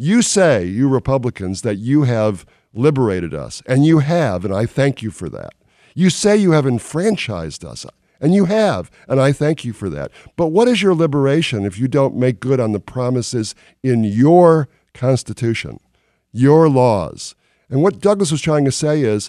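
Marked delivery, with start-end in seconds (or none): 0.0-17.3 put-on, pointed, sarcastic oratorical delivery. Quoting a speech to the Republican National Convention, imitating sarcasm. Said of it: "listen to the sarcasm".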